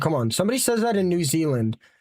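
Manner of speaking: ordinary talk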